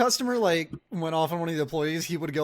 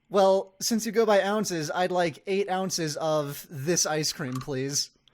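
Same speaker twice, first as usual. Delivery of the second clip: ordinary delivery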